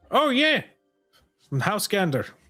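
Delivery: put-on Scottish-accented voice. In a game scene, a player answers a question about the mines in a Scottish accent. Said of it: "Scottish now".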